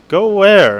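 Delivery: high, loud hiss through the teeth. Reading a story aloud, a character answering a question: hissed. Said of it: "Mike hissed".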